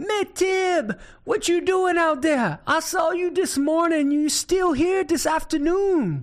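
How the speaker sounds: high-pitched, hollering Cajun voice. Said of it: "Boudreaux hollers back".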